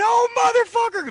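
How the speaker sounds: put-on very high-pitched anguished crying scream. Telling how a man bent over once the back door closed, imitating Bubba screaming in pain. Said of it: "started screaming. He started crying".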